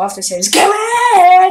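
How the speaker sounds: shouting. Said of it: "I should stop yelling".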